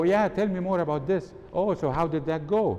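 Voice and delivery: lively, eager enthusiasm. Showing how tone of voice carries the message on the phone: excited. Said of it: "I need to feel excited".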